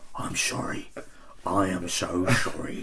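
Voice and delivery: slow, breathy, drawn-out delivery. Asked to do an actor apologising to someone about to die: David Tennant apologetic voice. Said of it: "It's like going".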